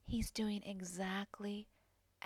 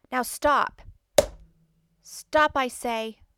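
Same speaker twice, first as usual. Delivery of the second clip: very loud, strong, authoritative commanding voice; 5 semitones higher, 19 dB louder than usual. In a comedy bit showing the ladies a technique, a strong authoritative voice. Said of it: "A very strong, authoritative voice always does the trick".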